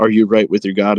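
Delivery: put-on taunting monster voice. Retelling how the monster mockingly repeats the warrior's question: imitating a taunting monster. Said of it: "taunting him the whole time".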